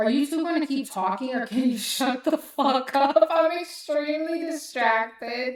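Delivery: loud, mock exasperated, fed-up call-out. Retelling snapping at a talking couple in a theater: retelling saying it loudly. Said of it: "I turned to them and loudly said".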